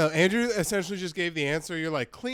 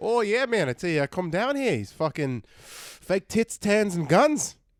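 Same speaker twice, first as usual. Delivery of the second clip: clumsy, rough, bad Australian accent; 3 semitones higher, 4 dB louder than usual. Talking with the others about coming down here, in a bad australian accent. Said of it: "Good try at an Australian accent".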